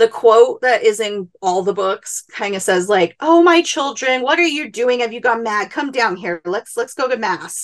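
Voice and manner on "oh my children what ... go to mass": very condescending, patronizing, coaxing tone. Retelling how a man tried to talk a group down in a ravine, in a mock condescending tone. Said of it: "in very condescending".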